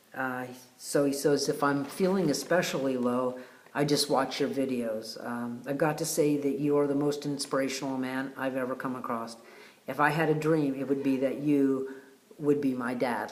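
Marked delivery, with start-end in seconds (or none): none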